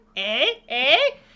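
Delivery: bad put-on Canadian accent, high and loud. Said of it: "I need to do a Bob and Doug McKenzie".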